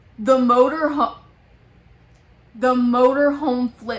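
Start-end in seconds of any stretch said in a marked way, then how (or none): none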